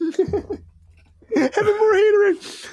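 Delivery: laughing through words, very high, slow squeal.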